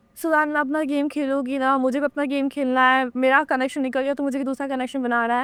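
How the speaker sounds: normal talking voice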